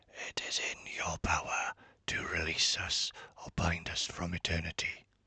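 hoarse, scratchy, sore-sounding whisper. Narrator reading the spirit's reply, Big Billy's scratchy whisper. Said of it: "the spirit whispered back, his voice scratchy and sore from not being used for a long time. ... his voice scratchy and sore from not being used for a long time".

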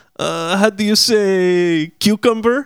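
put-on heavy Spanish accent, slow, high, drawn out. Retelling a TV clip where she stumbles over a word: heavy Spanish accent. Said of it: "with this heavy-ass Spanish accent".

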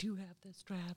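gentle, very soft, hushed voice. Retelling what the gentleman in charge would ask, imitating a very soft voice. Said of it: "Just in a very soft voice".

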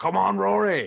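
rough, gravelly Scottish bellow, high pitched and loud. Retelling a voice that roared out after a missed chip: imitating a gravelly Scottish roar. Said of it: "a gravelly Scottish voice roars out".

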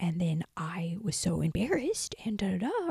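hushed, slow, gossipy voice. Acting out telling a loud friend a story: imitating a hushed tone. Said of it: "in, like, a hushed tone".

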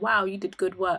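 plain

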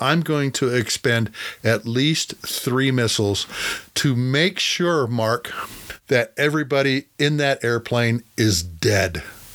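ordinary delivery

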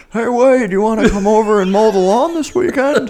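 very high, loud, dad-style voice. Explaining the only voice he can mimic, imitating his dad's voice. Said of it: "Only voice I can do is my father's voice".

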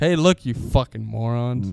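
harsh, stern, berating scolding voice. Imitating how the other speaker's mom teaches: imitating a mom insulting her students. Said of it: "That's how your mom teaches".

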